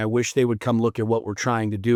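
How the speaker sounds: plain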